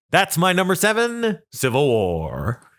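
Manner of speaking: swooping announcer delivery. Podcast host giving his number seven movie pick; Moviefone guy voice. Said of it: "Why am I talking like the movie phone guy?".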